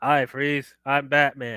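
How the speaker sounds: slow, dragged out, lackluster, flat, with zero menace. Mocking the movie's line delivery as Batman: imitating bad Batman line delivery. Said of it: "that's the delivery you're gonna give us?".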